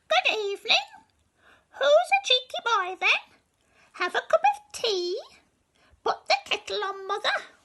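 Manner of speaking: very high, loud, chattering parrot voice. Reading a story aloud, voicing the clever parrot someone taught to speak: talking parrot voice. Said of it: "This is a parrot, and he's a very clever parrot. Somebody's taught him to speak. / This is a parrot, and he's a very clever parrot. Somebody's taught him to speak".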